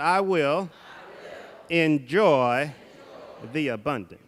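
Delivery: slow, full conviction, enjoy drawn out. Leading a group in repeating a line, really meaning it. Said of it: "say it like you really, really mean it".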